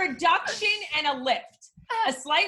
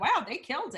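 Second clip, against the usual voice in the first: normal talking voice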